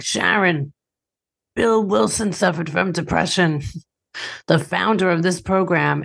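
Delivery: talking around a cigarette, smoke in mouth. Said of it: "of course he talked like this".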